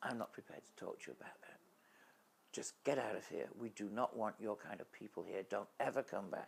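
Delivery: put-on furious woman voice, mock anger. Retelling how the woman at the health center threw them out, imitating a furious woman. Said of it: "came back in really furious and angry".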